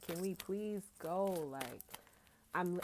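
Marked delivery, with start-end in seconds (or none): 0.0-1.5 put-on slow, begging, pleading little-kid voice. Acting out a tarot client's inner child begging to leave: imitating a pleading child.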